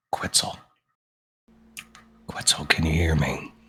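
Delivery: close, hushed, breathy whisper. Leaning in close to an unconscious character and whispering in her ear: whispering in character. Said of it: "with his head next to her head and whispers in her ear".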